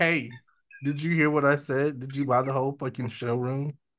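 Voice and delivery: mock sassy man's voice.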